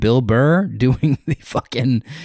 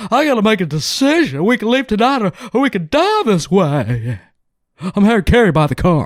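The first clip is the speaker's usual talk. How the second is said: put-on sports announcer voice, pitched higher; 8 semitones higher than usual. Acting a car commercial audition: Harry Carey voice. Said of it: "I just did Harry Carey".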